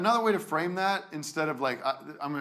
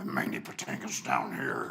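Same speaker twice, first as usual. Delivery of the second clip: low gravelly cowboy voice, even lower; 4 dB quieter than usual. Mocking an actor's low voice for Franklin: Mandy Patinkin cowboy voice. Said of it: "Like a cowboy".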